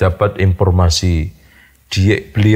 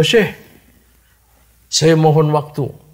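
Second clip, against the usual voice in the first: put-on tearful crying voice, pitched higher; 8 semitones higher than usual. Retelling a Bedouin's plea to the Sheikh: imitating someone crying. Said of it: "sambil menangis".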